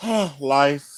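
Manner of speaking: acted, mopey voice. Retelling the one-word reply to the partner's question: imitating his own moping. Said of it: "do the mope".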